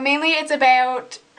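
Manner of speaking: about said with Minnesotan vowel. Speaker describing a horror thriller book slips into their Minnesotan accent. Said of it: "There is my uh, Minnesotan accent for you".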